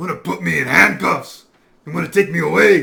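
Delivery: loud Mexican-sounding accent on every word. Saying how it always comes out, the speaker talks in a Mexican-sounding accent. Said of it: "It sounds Mexican when I say it".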